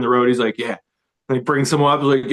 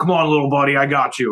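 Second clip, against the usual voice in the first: put-on Jersey guy voice and accent. Retelling being grabbed by a stranger at a show, imitating a Jersey dude. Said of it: "like this Jersey dude in a wife beater".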